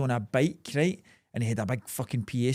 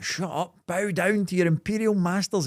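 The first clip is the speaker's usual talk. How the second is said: put-on man's shout, drawn out, pitched high; 5 semitones higher than usual. Retelling a man on a bike answering the crowd: imitating a man shouting. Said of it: "He just kept shouting at him with a mic".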